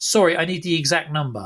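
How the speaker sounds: put-on very aggressive voice. Retelling what the ticket guy said back to him, imitating a very aggressive reply. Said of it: "like very aggressively".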